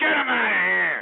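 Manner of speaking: angry shout, loud and rasping.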